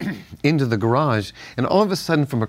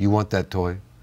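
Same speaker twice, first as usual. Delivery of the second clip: thick put-on Italian accent, much lower; 5 semitones lower than usual. Quoting his Italian grandfather speaking to him, in a thick Italian accent. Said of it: "very thick Italian accent".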